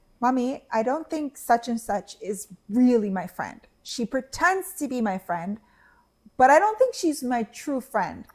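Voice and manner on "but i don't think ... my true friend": ordinary talk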